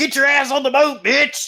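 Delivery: acted, very high, drawn-out shrieking scream. Acting out a joke scene with Moses in it: mock screaming. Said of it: "and he's screaming".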